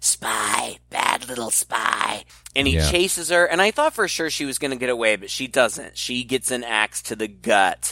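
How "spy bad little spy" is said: very slow, raspy feminine whisper. Retelling a story, voicing the killer as he confronts a spy, in a hoarse womanly whisper. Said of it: "in that womanly voice, he hoarsely whispers".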